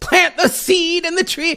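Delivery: very high, sermonizing, preachy televangelist voice. Talking about giving, the speaker slips into a televangelist impression. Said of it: "Now I sound like a televangelist".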